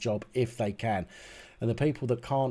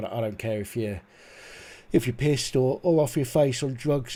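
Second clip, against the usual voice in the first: words pulled wide, talking through a yawn; 3 semitones higher, 4 dB louder than usual. Speaker in a two-person conversation, yawning while talking. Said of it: "I'm not yawning because I'm bored".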